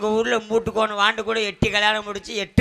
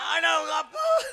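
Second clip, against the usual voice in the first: mock crying, wailing. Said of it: "இப்ப நீ ஏன் அழுகுற?".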